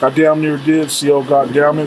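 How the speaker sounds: ordinary talk, nothing marked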